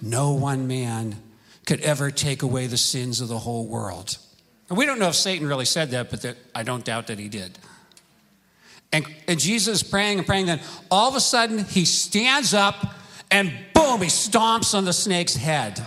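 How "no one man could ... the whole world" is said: hushed, very low half-whisper. Retelling a movie scene where a voice tempts a praying man: imitating Satan half-whispering. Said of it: "this voice of Satan whispering to him".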